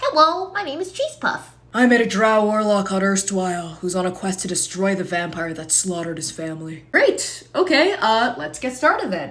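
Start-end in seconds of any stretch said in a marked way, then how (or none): 0.0-1.5 very high cat character voice. Speaker introducing their tabaxi character to the group, Cheese Puff's voice. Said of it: "she talks like this".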